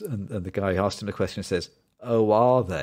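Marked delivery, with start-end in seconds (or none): 2.0-2.8 loud, pointedly sarcastic. Retelling a joke from a film scene: imitating a sarcastic reply. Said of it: "so sarcastic".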